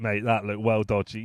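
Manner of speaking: ordinary talk, nothing marked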